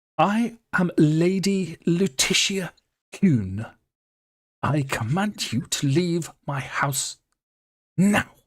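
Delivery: haughty tone. A storyteller voices a woman who spins round to face the group, haughty. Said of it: "sticks her nose in the air".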